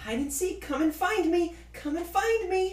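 put-on very high, loud, playful little girl voice. Calling down to teammates during hide and seek, little kid's voice. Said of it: "in the voice of a little kid who sounds like she's playing hide and seek".

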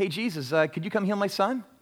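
easygoing, offhand, no-big-deal tone. Acting out how the father did not ask Jesus: imitating a casual ask. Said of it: "this word asked is not a casual ask".

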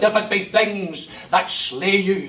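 slow, heavily laid-on put-on Scottish accent. Quoting a line from George MacDonald: George MacDonald Scottish accent. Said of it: "hear the same Scottish accent".

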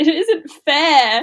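shrill, crying yell in a bad British accent. Retelling an actress's crying scene in London, mock-yelling in a bad British accent. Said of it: "yelling in her bad British accent".

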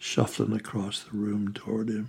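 plain reading voice

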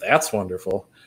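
sarcastic tone. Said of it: "all I did was change the tone".

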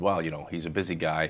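normal talking voice

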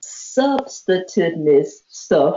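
very slow, drawn out syllable by syllable. Repeating a word someone used, saying it slow. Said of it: "let me say it slow".

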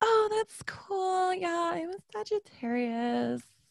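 put-on very high, drawn-out girly voice. Imitate the girls at a bar who never grow up past that point, in the Tiffany voice. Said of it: "the Tiffany voice".

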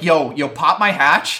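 put-on, panicked, pleading voice. Retelling a character who starts panicking: imitating panicked pleading. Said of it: "starts panicking and is like".

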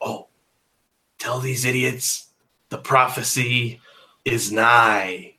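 whispering in a put-on voice. Voicing a skeleton who whispers to his partner: whispering in character. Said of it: "in a whispering tone".

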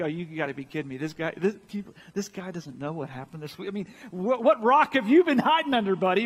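imitated sarcastic, disbelieving tone. Acting out Cleopas answering a stranger who knows nothing: imitating sarcastic disbelief. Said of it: "kind of sarcastic".

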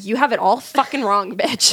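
usual speaking voice

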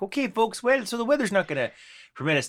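put-on Fargo accent. Act out your cruise captain telling the folks about the weather, with a Fargo accent. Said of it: "he had that sort of accent".

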